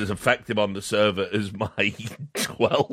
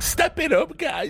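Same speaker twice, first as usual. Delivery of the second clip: put-on very high, squeaky little kid voice. Imagining a 12-year-old teammate in the game, in a squeaky little kid voice. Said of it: "It's like some squeaky little voice".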